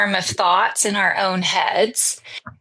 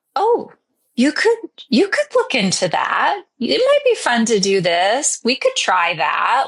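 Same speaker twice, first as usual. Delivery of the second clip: tender, curious, gentle sing-song voice; 2 semitones higher than usual. Speaker demonstrates how the voice of the soul sounds: gentle, tender voice. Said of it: "The voice of soul sounds gentle".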